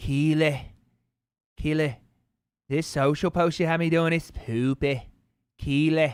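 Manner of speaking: put-on British accent. After watching Ted Lasso, addressing Keely in a Jamie Tartt accent. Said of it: "I just want to keep doing Jamie Tartt's accent".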